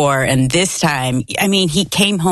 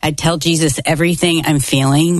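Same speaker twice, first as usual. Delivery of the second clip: ordinary talk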